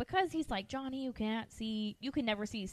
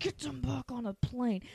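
whispered, hushed voice. Retelling how the dad in the movie phones the grandpa: imitating someone whispering. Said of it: "whispering it".

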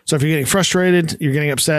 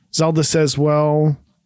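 plain

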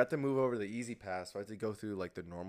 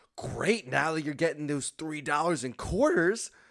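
higher, louder excited gush. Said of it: "she was so freaking excited".

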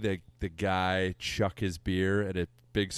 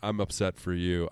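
normal talking voice

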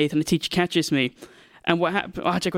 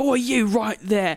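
put-on shouting, higher; 5 semitones higher than usual. Retelling a teacher catching kids running off: imitating a teacher shouting. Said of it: "She's shouting like".

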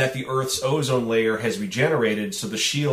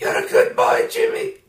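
high, badly done put-on old man's smoker voice; 4 dB louder than usual. Discussing Lambert's performance, the speaker quotes his old-man character in a terrible smoker's voice. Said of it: "He speaks with this terrible smoker's voice".

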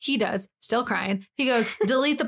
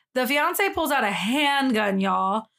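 usual speaking voice

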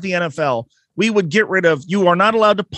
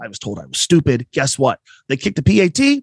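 ordinary delivery

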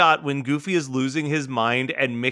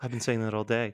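acted, completely flat, expressionless low monotone; 4 semitones lower, 8 dB quieter than usual. Retelling Mickey's reply to a complaint about sore feet: Mickey's deadpan monotone. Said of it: "completely deadpan and monotone".

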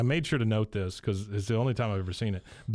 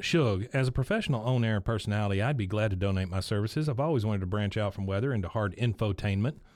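ordinary delivery

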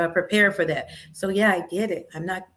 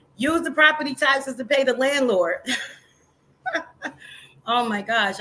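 talking through laughter, higher pitch; 6 semitones higher than usual. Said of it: "I'm laughing".

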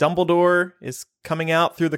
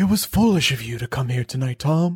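put-on low, stern, reproachful old wizard voice; 4 semitones lower than usual. Asked to do a Dumbledore impression of his line, Dumbledore impression. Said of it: "do your best Dumbledore impression".

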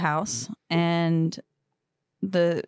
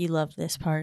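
normal talking voice

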